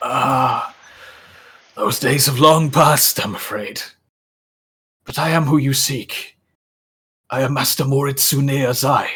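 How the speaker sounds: hoarse, dry voice. Voicing a master introducing himself to the one seeking him, Moritsune Azai's hoarse, dry voice. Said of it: "a horsey, dry chuckle out loud and just goes".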